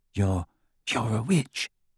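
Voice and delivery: hushed, soft, secretive half-whisper. Replying to her question, he half-whispers to her. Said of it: "whispered Snape".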